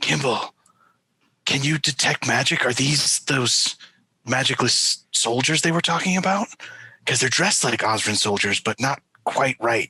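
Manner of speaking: hushed whisper. Kneeling in character to ask a companion about soldiers: whispering. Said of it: "kneel down and whisper to Gimbal".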